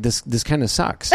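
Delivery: ordinary delivery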